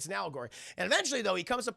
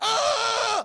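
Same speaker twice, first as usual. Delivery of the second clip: very high, loud, pained scream. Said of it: "He goes".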